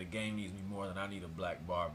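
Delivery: ordinary talk, nothing marked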